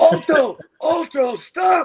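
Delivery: mock, very high, loud screamed call. Recounting being hoisted up during a stunt, retelling own scream. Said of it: "And I'm screaming".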